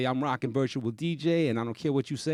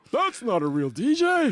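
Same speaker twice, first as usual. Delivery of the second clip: mocking put-on voice, higher and louder; 10 semitones higher, 6 dB louder than usual. Retelling what scoffing DJs said about computers: imitating scoffing DJs. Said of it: "that's how you sound".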